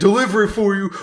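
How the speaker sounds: high, loud, aggressive delivery-driver voice. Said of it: "Just kicking down the doors and saying".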